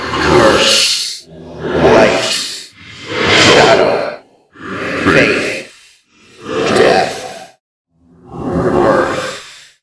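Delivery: speaking in a monster creature voice. Voicing a creature giving its answer: creature voice. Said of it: "The creature goes".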